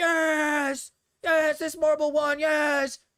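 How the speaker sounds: put-on, very slow, stretched-out, loud, high cheering scream. Describing watching marbles race on stream: imitating screaming at the screen. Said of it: "have a blast screaming at the screen going like".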